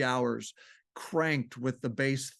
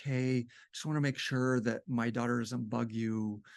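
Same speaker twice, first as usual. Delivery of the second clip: put-on very quiet, hushed, soft-spoken voice; 2 semitones lower, 3 dB quieter than usual. Retelling running into a neighbor in the laundry, imitating her very quiet voice. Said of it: "she talked in a very quiet voice".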